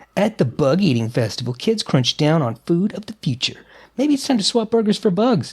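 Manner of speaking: ordinary talk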